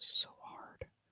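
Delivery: soft, frustrated whisper.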